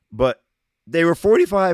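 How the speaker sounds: voice cracks, jumping high and loud. Going over the Brooklyn Nets' record last year, voice cracking. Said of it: "my voice cracked".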